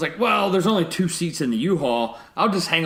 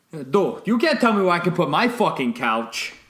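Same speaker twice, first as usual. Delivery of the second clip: put-on clichéd Yankee accent; 2 semitones higher than usual. Act out one of two men going at each other, in a cliched Yankee accent. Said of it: "two cliched Yankee accents going at each other".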